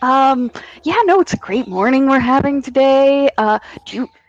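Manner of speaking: very open and friendly tone. Playing a character greeting a stranger like good friends: very open and friendly. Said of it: "very open".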